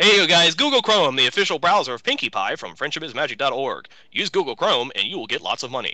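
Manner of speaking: radio announcer voice, on-air ad style. Speaker improvising a mock ad for viewers, in a radio announcer voice. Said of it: "that's my radio announcing voice".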